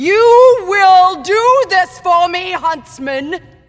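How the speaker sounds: slow, high-pitched, loud screaming.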